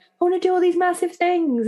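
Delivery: put-on high, giddy excitement.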